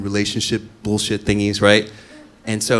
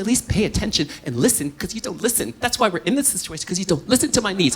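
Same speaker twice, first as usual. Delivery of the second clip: higher-pitched, argumentative whispering; 10 semitones higher, 4 dB quieter than usual. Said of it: "now we're in a whisper fight".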